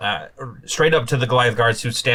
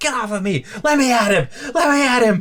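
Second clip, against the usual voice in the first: very high, shrill, straining shout; 13 semitones higher, 3 dB louder than usual. Game master voices a woman grabbed by a Goliath: shouting while struggling. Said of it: "starts struggling and starts shouting like".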